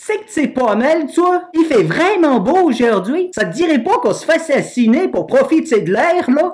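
low Canadian French, Québécois accent. In a step-by-step tutorial, the host demonstrates the phrase in a Canadian French accent. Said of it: "il peut prendre l'accent canadien".

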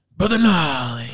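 a little bit of put-on Louisiana accent. Attempting an impression after saying it can't be done: Doctor B impression, Louisiana accent. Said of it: "It's that Louisiana accent".

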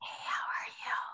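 loud, breathy stage whisper pushed to carry. Asked to say a greeting in a loud whisper, loud whisper. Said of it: "in a loud whisper for me".

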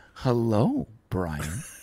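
soft, very calm, slow, deliberately unhurried words. Recalling the woman in the trailer greeting him, imitating very calm, slow speech. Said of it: "the woman spoke very calmly and very slowly".

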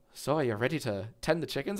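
put-on Irish accent. Describing a man who laughs all the time, imitate him with an Irish accent. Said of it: "imagine with a more Irish accent".

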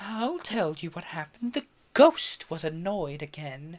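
lofty, self-important, haughty and superior tone. Narrator reads a woman who sits back down to speak: haughty voice. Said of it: "said in a haughty voice".

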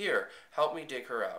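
ordinary talk

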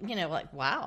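ordinary talk, nothing marked

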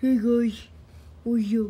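loud, big, fully in-character cartoon voice. Talking about a favorite character, greeting viewers in Buzz Lightyear voice. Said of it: "I love doing that voice".

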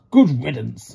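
grumbled words. A narrator reads an engine reacting after a visitor leaves, grumbling. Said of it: "Gordon grumbled".

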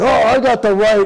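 put-on, mock angry voice. Retelling a plane passenger's reply to being threatened with removal, mimicking a mad passenger. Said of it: "he was all mad".

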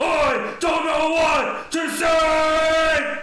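very loud, shrill, high, drawn-out screamo-style scream. Voicing a creature that blasts the party with sound: yelling into a microphone. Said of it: "this thing just yelling into a microphone".

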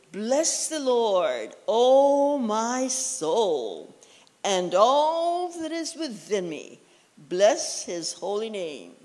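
slow reading aloud.

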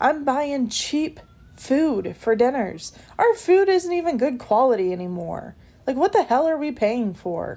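exasperated, frustrated, fed-up rant. Someone who wants to know how everyone affords inflation complains about the cost of food, frustrated. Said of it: "Sorry, I'm frustrated".

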